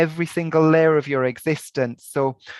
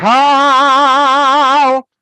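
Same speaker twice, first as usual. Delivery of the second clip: very loud, high, drawn-out "ka"; 9 semitones higher, 9 dB louder than usual. Showing the power behind the syllable with a big, powerful ka. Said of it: "if you do a big ka".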